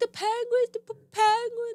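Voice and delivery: put-on very high, stumbling, hysterical child's sobbing. Retelling how a little brother answered while upset: imitating a child crying hysterically. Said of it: "And he's crying hysterically".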